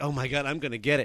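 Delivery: mock-scared voice. Telling of seeing his brother whipped by their dad, retelling being scared. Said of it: "scared as heck".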